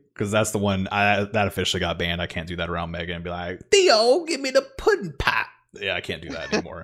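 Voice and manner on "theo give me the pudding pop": pushed way up in pitch, then swooping. Joking about a banned bit, doing a Bill Cosby impression. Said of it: "my perfect, uh, Bill Cosby impression".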